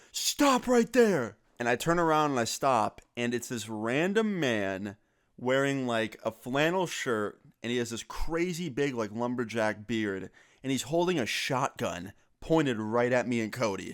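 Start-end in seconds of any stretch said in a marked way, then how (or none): 0.1-1.3 play-acted, shrill, very high scream. Retelling a stranger screaming from behind: imitating someone screaming. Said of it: "I hear someone scream from behind me".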